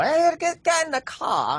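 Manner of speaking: loud, high, over-exaggerated Boston accent. Mocking how boston accents sound on television: over-exaggerated boston accent. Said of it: "over exaggerated on television".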